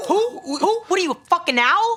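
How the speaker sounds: put-on New York Brooklyn accent, very high pitched. Quoting a line from Wolf of Wall Street: Brooklyn accent. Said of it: "I wouldn't even know how to say this without the accent".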